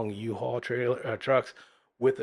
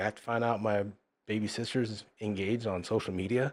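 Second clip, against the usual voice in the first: ordinary talk, nothing marked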